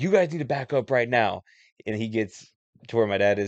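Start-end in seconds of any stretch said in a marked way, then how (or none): 0.0-1.4 mock hot-headed, heated, angry tone. Retelling how a man came in and ordered them back: imitating an angry order.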